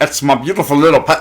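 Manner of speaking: put-on thick, laid-on mixed Irish and Scottish accent. Correcting another speaker's quote of a character: exaggerated Irish-Scottish accent. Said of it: "'cause we get the most Irishman, Irish Irishman".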